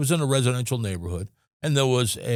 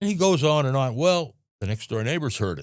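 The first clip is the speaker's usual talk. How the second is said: plain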